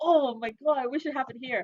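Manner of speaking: high, loud, angry outburst.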